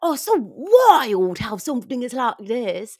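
put-on awful British accent, loud and high. Showing the only British accent she can do: Jamie Demetriou's British accent. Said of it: "his accent that he does on that".

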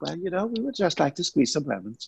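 laid-back, easygoing calm. Contrasting own high energy with the calm co-host: imitating a calm co-host. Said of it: "And she's like".

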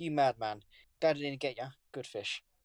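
ordinary talk, nothing marked

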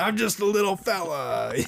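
thick New York Italian accent, pitched high. Joking about how Grogu should sound, voicing him in a thick New York Italian accent. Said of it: "a really thick New York Italian accent".

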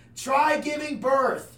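loud, high heckling yell. Speaker retelling how she screamed at them over kidney pain, imitating her scream. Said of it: "she literally screams at me".

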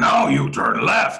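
loud, high-pitched puppet monster voice. Mimicking how someone talks along with the navigation app; Cookie Monster voice. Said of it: "She uses this Cookie Monster voice like".

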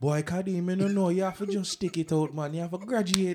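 put-on Jamaican accent. Recalling a psychology class, the speaker quotes a woman urging him to graduate: Jamaican accent. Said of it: "Jamaican voice".

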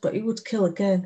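ordinary delivery

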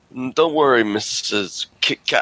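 reassuring superhero voice. Recalling a line from the movie: Adam West impression. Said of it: "he'd be like".

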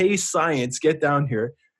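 mild, half-shouted, called-out yell. Telling a zipper story, repeating what he yelled at the speaker, retelling someone's yell. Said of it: "So he yells".

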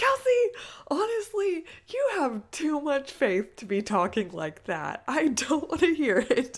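loud, boisterous, swooping voice. Kelsey retells a woman's reply to her joke, imitating a boisterous voice. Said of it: "in her boisterous voice".

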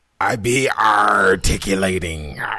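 deep, loud pirate-speak like a sea captain. Asked how they're doing, the speaker slips into pirate talk. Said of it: "That is some pirate talk".

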